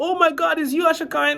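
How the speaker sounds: mock starstruck gasp.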